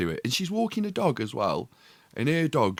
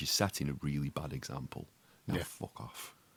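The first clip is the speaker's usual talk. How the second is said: very quiet, hushed, under the breath; 8 semitones lower, 10 dB quieter than usual. Retelling telling off a shouting woman while walking away: imitating saying it quietly. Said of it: "I just said it dead quiet".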